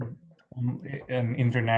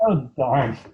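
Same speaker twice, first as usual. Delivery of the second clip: loud, put-on disappointed exclamation; 2 semitones higher, 7 dB louder than usual. Playing along with being teased, pretend disappointment. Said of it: "You're like, "Oh, darn it."".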